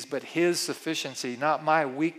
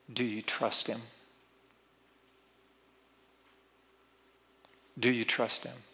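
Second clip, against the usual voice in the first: mock heartfelt, very sincere, earnest, searching tone; 5 semitones lower, 5 dB quieter than usual. Retelling what she says, taking his hand: imitating someone asking very sincerely. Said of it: "very sincerely".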